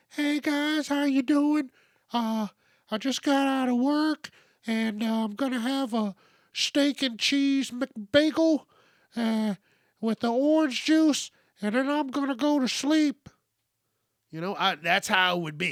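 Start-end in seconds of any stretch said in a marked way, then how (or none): 0.2-13.3 put-on, made-up high, breezy voice. Acting out an imagined version of oneself, talking with the high voice. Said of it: "talking with the high voice".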